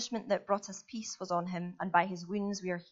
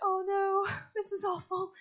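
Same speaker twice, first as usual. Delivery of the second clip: put-on high-pitched dismay. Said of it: "I'm like".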